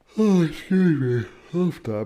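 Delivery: words stretched through a loud yawn. Presenter about to wrap up an explanation, yawning mid-sentence. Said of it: "I'm yawning, sorry, pardon my yawn".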